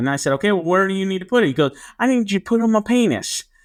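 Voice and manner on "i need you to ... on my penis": put-on heavy, thick small-town Arkansas accent, pitched up. Speaker retells a man's request to him, imitating Cody's thick accent. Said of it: "he had a really big accent".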